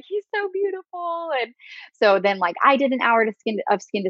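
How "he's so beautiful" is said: play-acted very high, tearful, bawling wail. Retelling what the crying partner said after the birth: imitating someone bawling. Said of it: "just bawling and was like".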